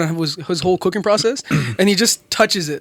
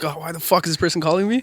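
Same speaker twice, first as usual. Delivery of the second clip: mock irritated tone, quieter; 4 dB quieter than usual. Retelling how a boss sounds on an unwanted call: imitating an annoyed boss. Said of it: "they just sound super like".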